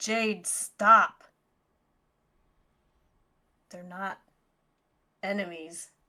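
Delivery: firm, authoritative, commanding tone. Holding a hand up to stop jade from attacking: most commanding voice. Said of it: "say in my most commanding voice".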